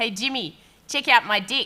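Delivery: put-on, laid-on New Zealand accent. Reading out a comment sent in by his father, in a Kiwi accent. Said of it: "In a Kiwi accent".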